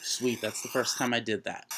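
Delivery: normal talking voice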